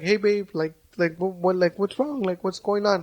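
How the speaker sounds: put-on gentle, delicate, soft tone. Acting out asking a partner what's wrong: imitating a gentle delicate tone. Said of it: "You start losing that delicate touch".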